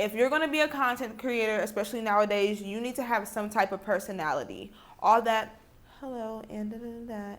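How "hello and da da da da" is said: mock flat monotone voice, quieter. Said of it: "We're tired of seeing the monotone content creators".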